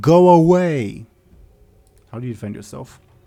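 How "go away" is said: very loud, high, unearthly shout. Voicing a character who yells at a player: otherworldly yelling voice. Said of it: "She puts on an otherworldly voice".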